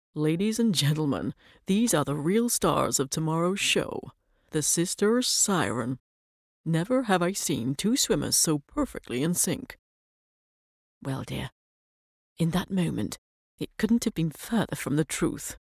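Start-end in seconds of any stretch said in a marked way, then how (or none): 0.2-9.8 put-on American drawl, drawn out. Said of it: "he says in that American drawl".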